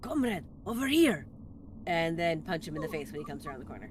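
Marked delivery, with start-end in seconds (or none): 0.0-1.3 loud, higher-pitched whisper yell. Calling an enemy soldier over from the shadows of a stairwell: whisper yell. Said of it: "whisper yell from the shadows of the stairwell in Russian".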